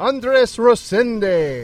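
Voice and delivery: put-on Italian accent. Pronouncing a performer's name, the speaker uses an Italian accent. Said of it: "Why'd you go with an Italian accent?".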